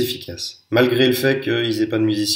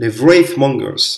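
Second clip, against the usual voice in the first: English pronunciation, louder; 4 dB louder than usual. Pronouncing an English unit name, apologizing first: English accent on the name. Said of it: "pardon mon accent anglais".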